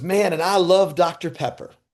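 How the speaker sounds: put-on elderly Southern woman voice, accent on. Speaker retells a story their mom told, imitating an old Southern woman. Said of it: "there's an old old Southern woman".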